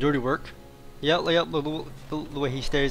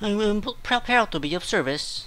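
put-on droid voice; 6 semitones higher than usual. Playing a Star Wars game and meeting the droids, doing a C-3PO impression. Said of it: "That's my C-3PO impression".

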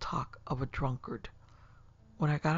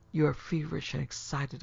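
plain

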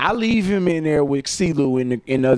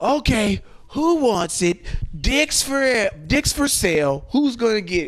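mock drunk voice, slow and high-pitched; 8 semitones higher than usual. Retelling what a drunk partygoer announced to a mixed room: imitating a drunk man.

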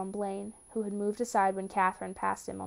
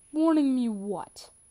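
raised, almost mocking tone; 4 semitones higher, 5 dB louder than usual. A father answers his son's warning, almost mocking. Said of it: "he asked almost mockingly".

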